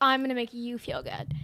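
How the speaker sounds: normal talking voice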